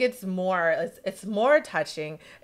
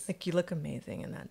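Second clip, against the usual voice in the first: slightly lowered tone, much quieter; 4 semitones lower, 11 dB quieter than usual. Showing how they sound when giving someone a compliment; lowered compliment voice. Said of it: "that like voice".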